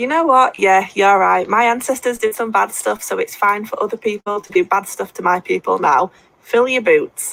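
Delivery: plain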